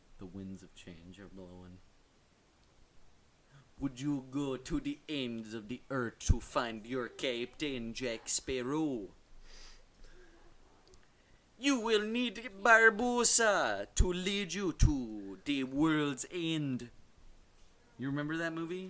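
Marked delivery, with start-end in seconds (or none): 0.2-16.9 sing-song delivery, pitch swooping up and down. Quoting lines from a pirate movie: Calypso voice. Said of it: "I do the Calypso voice".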